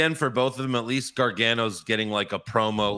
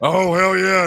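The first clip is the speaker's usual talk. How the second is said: put-on throat-straining wrestler voice, higher and louder; 9 semitones higher, 8 dB louder than usual. Showing the impressions that hurt the throat: Stone Cold impression. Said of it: "Stone Cold always hurts my throat".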